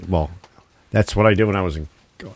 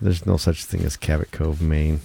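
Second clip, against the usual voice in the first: sad, much lower pitch; 3 semitones lower, 3 dB quieter than usual. Repeating her point to the other speaker, said sadly. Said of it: "I'm saying it like sadly".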